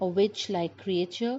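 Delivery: ordinary delivery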